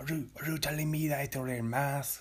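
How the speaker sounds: put-on French accent sliding into a Mexican accent. Acting out a joke scene about wearing a mask: put-on french accent turning mexican. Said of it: "my French accent is turning Mexican".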